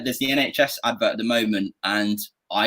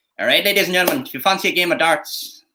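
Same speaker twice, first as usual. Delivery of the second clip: pitched-up Northern Ireland accent; 7 semitones higher than usual. Asked for different accents, doing the line in a northern irish accent. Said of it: "Northern Ireland".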